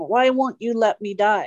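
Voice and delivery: screaming. Retelling what a dying father screamed in pain: imitating a scream. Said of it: "he was screaming".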